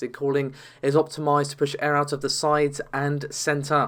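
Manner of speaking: usual speaking voice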